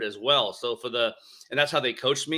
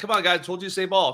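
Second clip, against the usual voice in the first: mock coach voice, raised, pitched-up yelling; 8 semitones higher than usual. Retelling yelling at players during a drill: imitating own past yelling. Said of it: "I would be like yelling at them".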